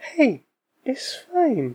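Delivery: soft, soothing, gentle sing-song. In a sketch, a hay fever medication reassures the body's defenses in a soothing tone. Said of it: "telling your body's defensive systems it's fine in a soothing tone".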